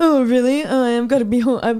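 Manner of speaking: loud, bitter, sarcastic delivery, spat out.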